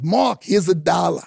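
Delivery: loud, put-on Brooklyn accent. Describing how his father talked, imitating dad's brooklyn accent. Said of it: "So he talked like this".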